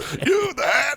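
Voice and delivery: loud, shrill outburst. Retelling the funniest part of the episode: imitating Mike yelling in the Mike voice. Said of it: "when he just fucking loses it in that Mike voice".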